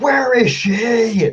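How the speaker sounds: very high yelling scream, stretching "she". A character on a windswept mountainside screams at another character, screaming. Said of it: "and I just scream".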